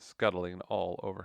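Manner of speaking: plain reading voice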